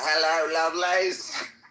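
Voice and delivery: very high-pitched, fake put-on British accent. Show how you would greet a British audience while pretending on stage, in a put-on British accent. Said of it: "walk on stage with a fucking British act".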